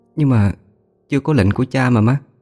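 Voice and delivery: trembling voice. Hà hesitates and holds back, answering her mother, in a trembling voice. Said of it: "giọng run run".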